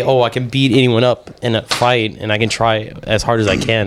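ordinary delivery

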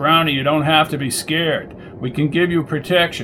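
ordinary delivery

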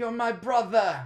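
put-on British accent.

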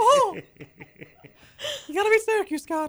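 fake squeaky cartoon mouse voice. Quoting a gif of a foul-mouthed Mickey Mouse: Mickey Mouse voice. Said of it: "do a whole segment in Mickey Mouse voice".

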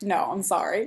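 usual speaking voice

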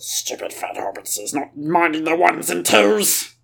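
soft, muttering cave creature voice. Co-hosts scold the producer for not minding the sound: Gollum voice. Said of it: "Producer Gollum".

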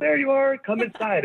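high, bright calling voice.

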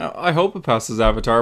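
normal talking voice

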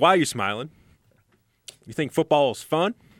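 loud, high-pitched, called-out voice. Quoting a film scene about smiling: Denzel Washington impersonation. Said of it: "my Denzel Washington impersonation".

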